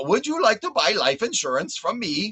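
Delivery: clumsy, bad, put-on Indian accent. Speaker imitating a telemarketer calling them, bad indian accent. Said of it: "telemarketers calling me from India as they're going".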